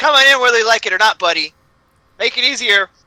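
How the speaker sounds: very loud, high-pitched shout. A player's character, carving through a locked door, calls to whoever is inside, yelling out. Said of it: "I yell out".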